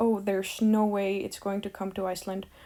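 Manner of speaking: ordinary talk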